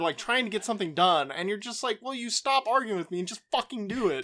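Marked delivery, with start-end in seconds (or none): 2.0-4.2 acted-out panicked frustration, higher pitch. Acting out arguing while trying to get something done: imitating panicked frustration.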